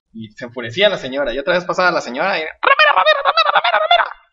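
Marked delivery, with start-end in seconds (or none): 2.4-4.0 put-on shouting parrot voice, much higher. Telling a story about a parrot that shouts at a passing woman: parrot shouting. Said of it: "le empieza a gritar el periquito".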